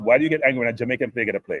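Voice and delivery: ordinary delivery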